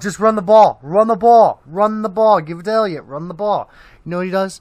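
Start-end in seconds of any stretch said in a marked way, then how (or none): 0.0-3.7 booming, very loud, insistent repeated hollering. Retelling how the other speaker screamed at the tv: imitating someone screaming. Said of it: "you screamed at the T V".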